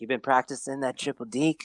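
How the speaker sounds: hushed, secretive stage whisper with the voice kept on. Quoting a line from a hockey movie scene, imitating a half-whisper. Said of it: "I don't know why he's whispering".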